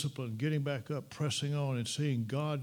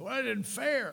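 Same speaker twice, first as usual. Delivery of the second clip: mock very high, aggrieved, upset grumble; 10 semitones higher than usual. Acting out followers complaining that it isn't fair: imitating upset complaining. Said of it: "they're a little bent out of shape and upset".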